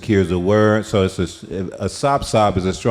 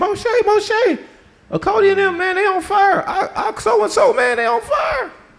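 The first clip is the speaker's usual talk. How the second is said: acted-out, very high, drawn-out, pleading outcry. Retelling how people cried out to moshe: imitating people crying out. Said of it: "People start crying out to Moshe".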